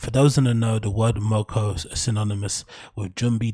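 normal talking voice

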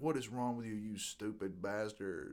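play-acted, soft, bitter, angry cursing. Recalling falling on the deck after pepper spray, retelling cursing at a cop. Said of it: "cursing this cop".

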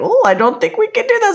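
put-on British woman's accent, pitched way up. Retelling a British woman's words, in a British accent. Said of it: "with her accent and very like".

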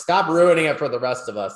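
mock playful teasing. Recalling teasing an artist over his covers, retelling the teasing. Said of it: "I was teasing him".

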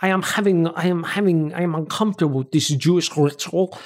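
put-on German accent. Retelling a scene, the speaker voices Dietrich's line in a German accent. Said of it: "as I try and do a German accent".

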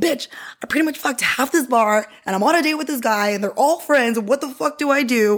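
mild, mock half-shouted ranting outburst. Retelling what she yelled while on a date at a bar, retelling her own yell. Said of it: "So I'm yelling at my room".

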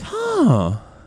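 mock shrill, very high, loud startled "huh". Describing the noise he made every time, imitating a surprised "huh". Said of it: "he made a noise as if it was like a surprise to him".

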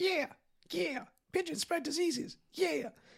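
really high-pitched, squeaky voice. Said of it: "that guy with the really high-pitched voice".

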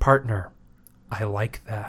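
emotionless, snarky, low, flat, soft deadpan. Quoting Cho-Cho's dying line to the others, do an emotionless Chevy Chase impression. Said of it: "I'm trying to say it like Chevy Chase because there's no emotion".

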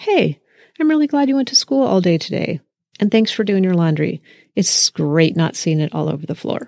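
sincere, genuine tone, rattled off quickly. Showing what a CRAFT response would sound like, in a genuine voice. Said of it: "in a genuine voice".

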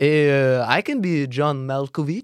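put-on heavy Italian accent, laid on thick, slow, drawn out. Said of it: "with such a thick accent".

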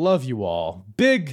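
sudden loud yell. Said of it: "I just fucking yelled for no reason".

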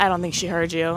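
normal talking voice

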